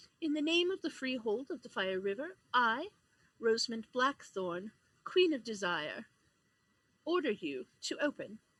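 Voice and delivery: soft-spoken, quiet yet far-reaching voice. Narrator voicing a queen ordering a gateway to open, quiet but carrying voice. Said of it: "she speaks quietly, but her voice carries strongly".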